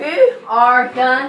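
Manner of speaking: loud voice cracking and breaking on the words. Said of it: "My voice is cracked".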